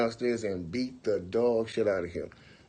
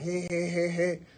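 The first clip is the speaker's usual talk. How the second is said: put-on laughing "hey", much higher pitch; 7 semitones higher than usual. Retelling how a guy poked him with a pool stick, imitating someone laughing. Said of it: "laughing like".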